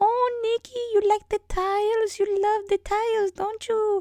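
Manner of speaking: put-on Romanian accent with the voice pushed very high. Retelling what a woman from Romania says to the speaker's sister, imitating her accent. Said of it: "And she talks like this".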